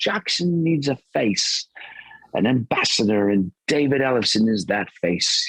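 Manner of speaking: put-on British accent. Quoting what a jackson artist-relations man said, in his british accent. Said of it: "in his British accent".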